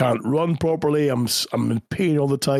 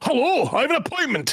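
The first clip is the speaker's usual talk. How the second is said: theatrical, dramatic put-on voice, very high pitched; 12 semitones higher than usual. Demonstrating the voice someone does in the intro, Scotty Taylor voice. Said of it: "So he's doing that voice".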